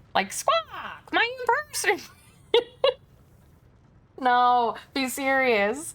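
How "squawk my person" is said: very high, swooping, squawking silly bird voice. Storyteller voicing a character, trying out a stupid voice for him. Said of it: "I want to give him a stupid voice".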